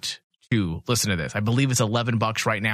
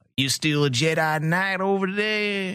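over-the-top, high, put-on Southern cowboy accent; 8 semitones higher than usual. Mocking how some actors delivered their lines, in a Southern cowboy voice. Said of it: "a Southern cowboy?".

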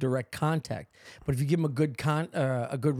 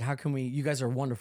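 ordinary delivery

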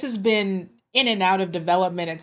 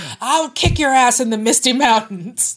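loud, slow, heavy wrestling-promo voice; 4 semitones higher, 7 dB louder than usual. Joking that the announcement sounds like The Rock: The Rock wrestling promo voice. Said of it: "sounds like The Rock is telling you".

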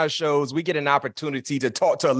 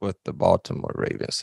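secretive, hushed whisper, said to one side; 8 semitones lower, 3 dB quieter than usual. Episode intro listing a guest's career, whispering a rival team's name: whispered. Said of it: "I got to whisper that".

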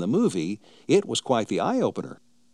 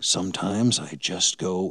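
quiet, put-on menacing voice, much slower; 4 semitones lower than usual. Recalling what a movie character said very quietly, mock-menacing Billy Jack quote. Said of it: "in a menacing tone".

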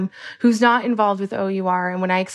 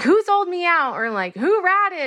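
mock loud shout, pitched very high; 9 semitones higher than usual. Recounting a raid full of shouting, retelling what someone was yelling: retelling a yell. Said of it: "Tim's yelling like".

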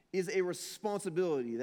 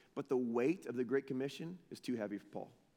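normal talking voice

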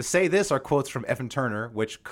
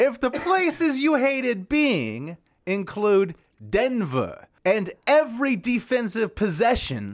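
pitched-up, swooping comic delivery, pitch swung around; 10 semitones higher than usual. Performing an announced bit about Carmelo Anthony in a Jeff Foxworthy voice. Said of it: "This is Jeff Foxworthy on Carmelo Anthony".

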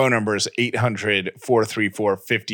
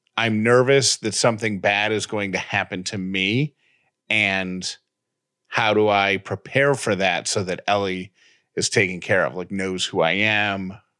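normal talking voice

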